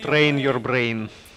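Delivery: put-on Russian accent. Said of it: "say with Russian accent".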